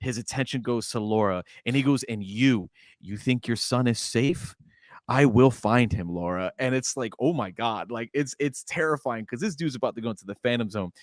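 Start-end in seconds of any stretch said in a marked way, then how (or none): 2.0-6.5 put-on convinced tone, slower. Recapping a show scene, quoting a man as he turns on a woman, with put-on conviction. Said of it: "he says it with such conviction".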